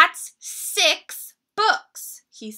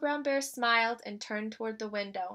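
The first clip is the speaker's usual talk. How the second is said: ordinary delivery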